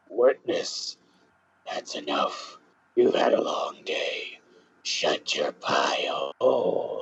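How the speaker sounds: whispered, hushed, breathy demonic devil voice. Voicing a character during a courtroom case in a game, in a devil voice. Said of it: "devil voice, devil voice".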